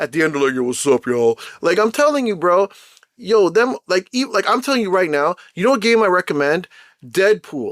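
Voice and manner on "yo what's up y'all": put-on, mock dropped low voice. Speaker imitates female gamers at the end of a session, in a dropped low voice. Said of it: "Like their voice all drops and thing".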